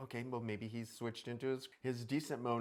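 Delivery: plain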